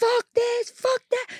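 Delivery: very high-pitched, stretched-out, ranting, cursing scream. Retelling how a date at a baseball game screamed at the umpire: imitating someone screaming. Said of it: "screaming about, like, the umpire".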